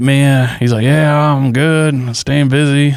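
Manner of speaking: slow, easy, stretched-out drawl. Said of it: "he's got this drawl".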